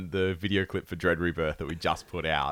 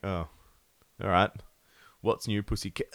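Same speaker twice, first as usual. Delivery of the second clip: plain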